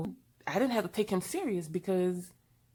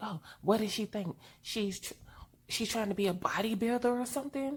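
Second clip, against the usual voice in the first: muttered aside, still fully audible; 3 semitones higher than usual. Retelling a gym-goer's remark, imitating a loud muttered aside. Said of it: "supposed to be mumbling or whispering, but yeah, it wasn't a whisper".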